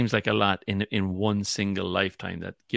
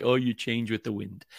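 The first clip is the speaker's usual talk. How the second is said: mock-condescending tone; 2 semitones higher than usual. Telling the other person how they come across, mock-condescending. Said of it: "you're being condescending because you're like".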